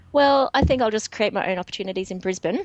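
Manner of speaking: ordinary talk, nothing marked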